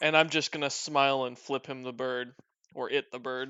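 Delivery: ordinary delivery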